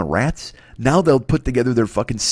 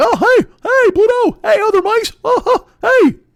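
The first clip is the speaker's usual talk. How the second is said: very high, loud and slow voice; 6 dB louder than usual. Acting out Mickey as the front guy greeting Pluto: Mickey Mouse voice. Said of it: "the front guy who was like".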